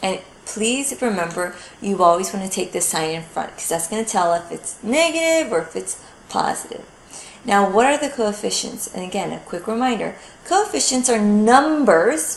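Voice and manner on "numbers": heavy stress on the numbers. Explaining coefficients in a math lesson; stress on 'numbers'. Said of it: "notice I stress the word numbers".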